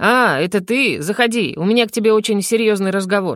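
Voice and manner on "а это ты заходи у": plain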